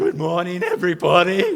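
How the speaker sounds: breaking, cracking voice with wild pitch swings. Retelling starting a class speech during puberty, imitating a voice crack. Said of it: "my voice just kind of had these moments".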